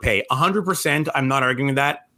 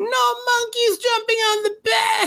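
mock crying, very high, slow and wailing. Retelling what a crying child said after falling: imitating a crying child. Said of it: "crying the words out".

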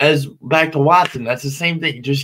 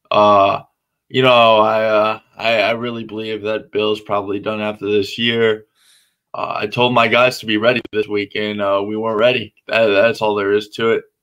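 put-on monotone, much lower pitch and slower; 7 semitones lower than usual. For the Patriots segment, speaker talks like Bill at press conferences: Bill press-conference monotone. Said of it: "I'm just going to talk like this, like Bill does during press conferences".

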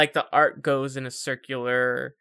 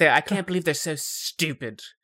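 put-on angry character voice; 2 semitones higher than usual. Imitating a game character who is angry at the Wardens: imitating angry Solus. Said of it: "he's just so angry about the Wardens".

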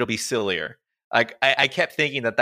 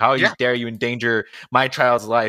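put-on angry mother voice. Retelling a movie scene where a mother scolds a coach: imitating Charlie's mom, angry. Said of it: "all pissed".

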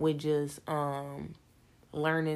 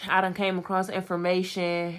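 usual speaking voice

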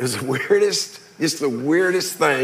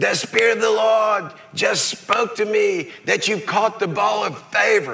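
put-on British accent, pitched up; 6 semitones higher than usual. Retelling what a man you know came running up to say, imitating Jeff Hackelman's British accent. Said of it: "in this British accent".

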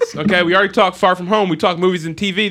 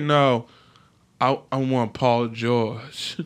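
very slow, drawn-out Southern drawl; 7 semitones lower, 6 dB quieter than usual. Retelling how a player demanded a trade: Kawhi Leonard with Southern accent. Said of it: "why did he sound Southern".

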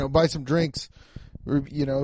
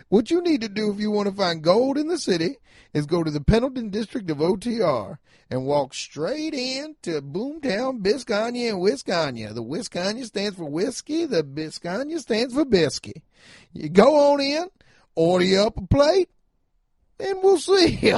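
put-on old frontier gold-miner character voice, pitched high; 6 semitones higher than usual. Reading an ad for a restaurant: prospector voice. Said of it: "this is my prospector voice".

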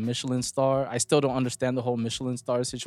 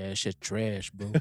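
put-on Texan accent; 4 semitones lower, 8 dB quieter than usual. Quoting what he says when texting, in a put-on Texan accent. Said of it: "What kind of accent was that? ... Texas".

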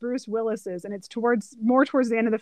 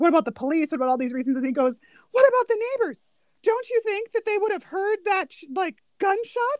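put-on panicked voice, higher pitched; 9 semitones higher than usual. Retelling a movie scene: imitating Bruce Willis freaking out.

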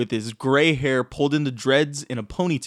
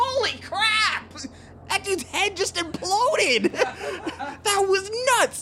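little, tiny kobold voice, very high. A tiny blue kobold runs up to the party after a fight: little kobold voice. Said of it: "this little tiny blue kobold who runs up to you and goes".

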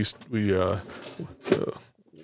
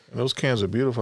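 ordinary talk

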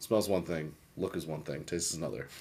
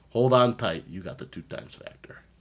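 put-on thick, heavy Chicago accent; 5 semitones higher, 5 dB louder than usual. Repeating a phrase he says he'll use a lot, in a thick Chicago accent. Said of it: "with a very thick Chicago accent".

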